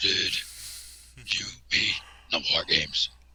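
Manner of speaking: slow, breathy, hushed character voice. Quoting the Shockmaster's entrance line in Ole's voice. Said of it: "How the hell did Ole do that voice?".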